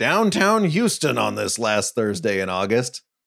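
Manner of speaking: football broadcaster voice. Retelling the broadcast's downtown shot: Al Michaels voice. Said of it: "you heard that Al Michaels voice go".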